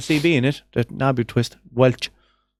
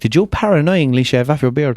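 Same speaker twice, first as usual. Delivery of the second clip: normal talking voice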